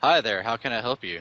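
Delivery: sarcastic, falsely polite, fake friendly tone. In character, greeting armed strangers to defuse the situation: sarcastic, grinning greeting. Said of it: "a little bit of a sarcastic grin while saying".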